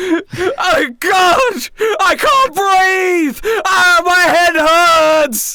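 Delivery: very high, very slow, loud, frantic panicked screams. Voicing a hammerhead shark out of water, loud panicked screaming. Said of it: "you are loud".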